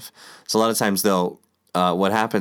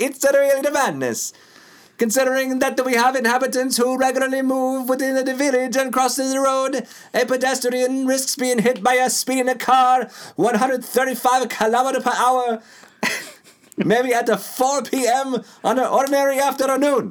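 put-on Italian-accented presidential voice, pitched higher. Reading a news item after being asked: Italian FDR impression. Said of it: "I want an Italian F D R".

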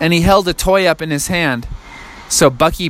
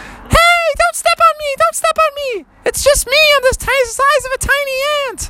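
tiny voice pitched very high. Narrating a story, voicing Froggy down on the ground: tiny high Froggy voice. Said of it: "his voice was so high".

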